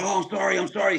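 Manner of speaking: mock, very high, all-sorry pleading tone. Retelling a bathroom fight, quoting the beaten guy: imitating an apologetic plea. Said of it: "So he becomes all apologetic".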